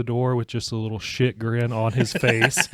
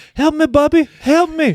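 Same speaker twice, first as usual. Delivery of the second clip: put-on very high, loud small-child voice, pleading; 6 dB louder than usual. Retelling how the little boy calls from behind the door: imitating a little boy calling for help. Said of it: "if Liam walks by".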